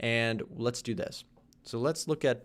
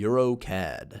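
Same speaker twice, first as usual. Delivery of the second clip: put-on sports announcer delivery, louder; 5 dB louder than usual. Announcing a currency pair to look at next: mock sports announcer voice. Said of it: "Do I sound like a sports announcer?".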